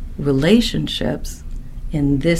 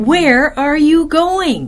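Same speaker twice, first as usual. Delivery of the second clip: slow, loud, high-pitched screaming. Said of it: "the C E O just screamed at him".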